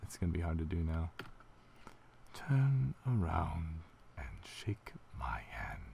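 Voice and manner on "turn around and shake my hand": eerie, slow, swooping creepy character voice. Performing a character voice the speaker made up: creepy character voice. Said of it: "I make the creepy voice".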